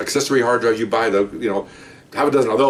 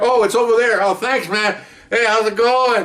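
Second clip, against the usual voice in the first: very high, loud, boisterous, obnoxious fake-drunk voice; 11 semitones higher than usual. Retelling a supervisor acting drunk to fool burglars: imitating a loud obnoxious drunk. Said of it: "really loud and obnoxious".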